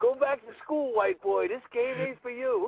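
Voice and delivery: put-on very high, loud, taunting scream. Retelling how Ali screamed while giving noogies: imitating Ali screaming. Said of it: "He starts screaming".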